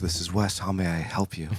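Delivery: acted low, sultry tone. Retelling how he answered the club phone, in his sultry voice. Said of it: "in my sultry voice".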